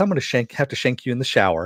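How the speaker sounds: put-on matter-of-fact sweet voice. Retelling a line from the show in character: King Shark voice, matter-of-fact but sweet. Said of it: "just the way he says it with, uh, Ron Funches's voice".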